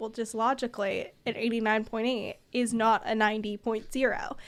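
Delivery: ordinary talk, nothing marked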